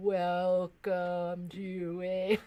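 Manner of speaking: speech slowed right down, very slow and low. Showing a fast talker how the slow talker sounds when played slower: [name] slowed down. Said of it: "But if I slow it down, then [name]'s like".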